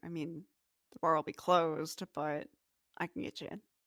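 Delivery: quiet, hushed half-whisper. Narrator voicing a man who half-whispers back to the player's character: half-whispering. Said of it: "he kind of whispers back to you".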